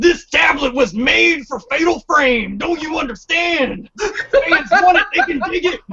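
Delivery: gravelly high wrestler voice. Ranting about a game tablet, Macho Man voice. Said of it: "I'll say it with my Macho Man hat".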